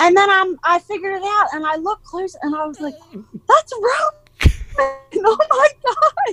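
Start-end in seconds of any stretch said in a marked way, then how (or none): 3.5-6.3 thrilled, very high, slow, drawn-out scream. Recalling spotting Roman doing tricks as a clown: retelling own excited screaming. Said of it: "the whole time I'm screaming".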